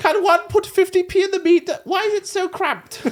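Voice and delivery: posh and shrill at full volume. Trying out an English accent, the speaker slips into the Queen. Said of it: "I got into the Queen then".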